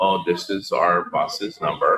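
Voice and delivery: ordinary talk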